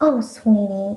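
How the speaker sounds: mock patronizing, condescending old man voice. Retelling what an old man said about the music: imitating patronizing old man. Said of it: "old men patronizingly call me sweetie".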